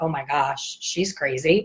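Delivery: words cracking up with laughter. Retelling how the booth workers reacted: imitating people laughing while talking. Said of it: "the people at the booth are cracking up like".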